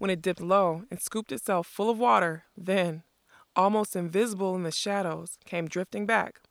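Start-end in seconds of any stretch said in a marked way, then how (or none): none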